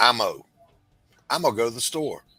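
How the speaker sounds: imitated Southern accent. Quoting people from the area: Southern accent. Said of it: "the Southern accent in the area".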